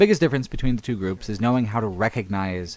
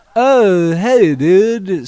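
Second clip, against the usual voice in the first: put-on stoner voice, very high, shrill and loud; 10 semitones higher, 11 dB louder than usual. Describing a game character who gives a quest, doing a stoner voice. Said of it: "stoner voice".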